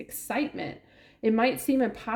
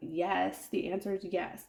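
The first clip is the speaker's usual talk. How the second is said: mock tongue-in-cheek, sarcastic yes; 6 dB quieter than usual. Retelling own earlier remark about a message: imitating own sarcastic remark.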